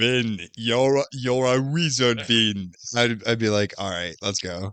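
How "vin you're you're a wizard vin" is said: slow, drawn-out, put-on Austrian accent. Imagining Arnold as Hagrid telling Vin he's a wizard, Arnold Schwarzenegger accent. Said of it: "how was the Arnold accent?".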